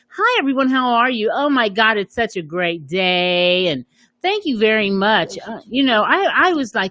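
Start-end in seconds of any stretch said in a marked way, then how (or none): 0.2-5.4 put-on polite, professional workplace voice. Speaker showing how she started out at her job, imitating her polite work voice. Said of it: "So I started off like this".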